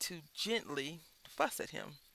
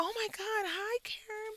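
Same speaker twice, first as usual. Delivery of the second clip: mock excited voice, higher pitch; 3 dB louder than usual. Describing a call where the other person is thrilled: imitating an excited caller. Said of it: "they're excited that you called them".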